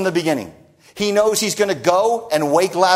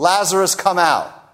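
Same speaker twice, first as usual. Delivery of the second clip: mock calling out loudly in a great voice. Retelling a story where a man is called by name to come out, loud calling out. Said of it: "He calls out in that loud voice".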